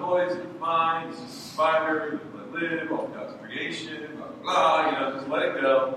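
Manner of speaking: ordinary talk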